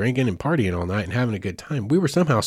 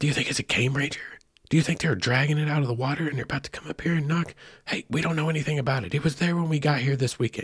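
hushed, nervous, tense stage whisper; 4 semitones higher, 4 dB quieter than usual. Recalling what the group half-whispered while freaking out, retelling a half-whispered conversation. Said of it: "I remember the conversations like in whispers".

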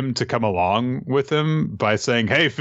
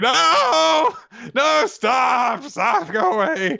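put-on crying voice, much higher and slower. Recapping a story scene, acting out a character crying: imitating Usopp crying. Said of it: "Usopp is crying, like".

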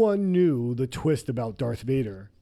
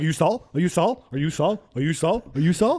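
put-on frantic, anxious voice, pitched higher; 3 semitones higher than usual. Imitating someone asking the same question over and over: imitating a frantic guy. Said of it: "He's so frantic. He's like".

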